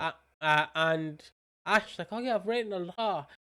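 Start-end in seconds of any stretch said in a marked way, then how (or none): 2.1-3.2 mocking, sarcastic, pitched-up delivery. Retelling what a friend said about his script: imitating a sarcastic remark. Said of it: "sarcasm. It's all sarcasm".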